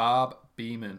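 booming, loud put-on American accent. Saying a name after being asked for an American accent. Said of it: "Can you say these names in an American accent".

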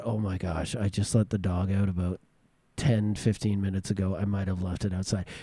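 sheepish, guilty, low and soft. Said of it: "I said".

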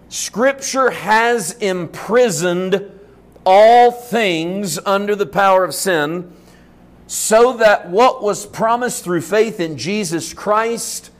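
very slow, deliberate delivery.

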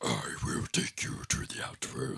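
whispered, breathy movie devil voice. Describing Shao Kahn popping up in Mortal Kombat, Shao Kahn Hollywood devil voice. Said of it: "hits the typical Hollywood devil voice of".

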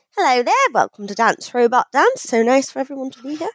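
bad put-on English accent. Opening the podcast after being urged to use an english accent: bad english accent. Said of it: "That was the worst English accent I've ever done".

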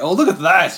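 put-on, thrilled, gushing, high and loud exclamation. Imitating the other speaker reacting to a new Pip: imitating an excited voice. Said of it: "you're excited to see a knee, a new Pip".

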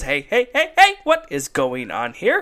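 sudden burst with pitch swinging up and down. Retelling a TV scene where Belding walks in: imitating Mister Belding. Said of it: "Belding comes in and goes".

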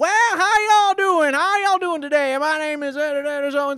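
put-on shrill, very high, booming, eccentric southern rancher accent. Recounting a monologue performance, the speaker comes in with an eccentric southern rancher voice. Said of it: "southern rancher kind of thing but like a really like eccentric one".

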